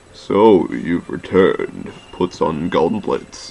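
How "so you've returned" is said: put-on very deep character voice. Taking the part of Trey in a group scene, Trey voice, deep as possible. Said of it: "deep as possible".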